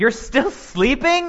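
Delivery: exasperated, frustrated, very high-pitched voice. Showing one possible reading of Jesus' words to the disciples: frustrated observation. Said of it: "a frustrated observation".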